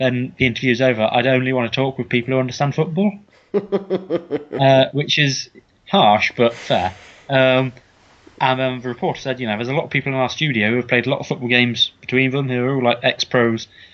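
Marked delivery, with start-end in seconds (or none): none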